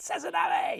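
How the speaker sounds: samurai-style warrior cry shout. Showing how to say a lure's name: said like a samurai. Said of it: "You gotta say it like you're a samurai".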